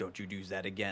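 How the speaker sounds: threatening, menacing bounty-hunter voice. Voicing the bounty hunter Courage pointing a gun: threatening bounty hunter Courage. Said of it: "Courage is gonna point at you and say".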